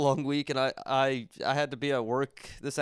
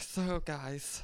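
put-on nervous, unsure, insecure inner voice; 2 semitones higher, 7 dB quieter than usual. Explaining a nervous tic, saying so guys in a put-on insecure voice. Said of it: "That's the other voice in my brain. This is normal voice. That's the insecure voice".

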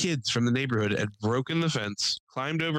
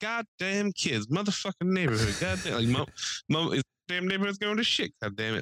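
pitched-up, griping, cursing grumble; 5 semitones higher than usual. Retelling what an old neighbor muttered walking up to the cops: imitating Terry. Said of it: "He's like".

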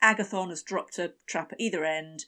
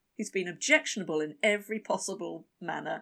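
normal talking voice

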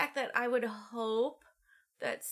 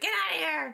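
imitated scream, higher and louder; 5 semitones higher, 4 dB louder than usual. Retelling a movie scene where a character screams at someone: imitating a scream. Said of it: "she just screams".

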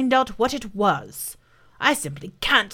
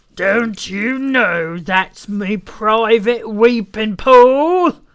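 deep, loud, angry and severe voice; 6 dB louder than usual. Narrator reading a story, an unseen speaker confronts a man at its pool: deep angry voice. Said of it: "Said a deep, angry voice".

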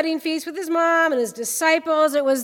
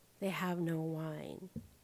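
very hushed, slow, very quiet half-whisper; 12 semitones lower, 19 dB quieter than usual. Retelling a mother's quiet aside to her son: imitating a quiet half-whisper. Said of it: "she says quietly, just so he can hear her".

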